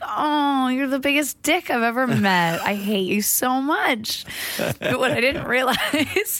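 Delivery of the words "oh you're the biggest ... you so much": tender, doting, sweet loving voice, pitched up. Showing how she said mean things to the cats: mock-loving voice, mean words. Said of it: "but in a loving voice".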